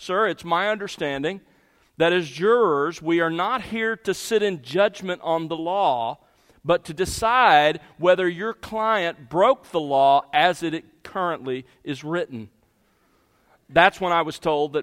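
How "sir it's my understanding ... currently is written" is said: usual speaking voice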